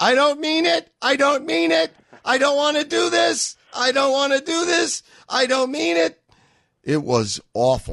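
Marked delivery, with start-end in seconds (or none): 0.0-6.2 mock, very high-pitched screaming voice. Describing Lindsey Graham's body language on stage, Lindsey Graham, mock-screaming. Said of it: "he looked as though he were screaming".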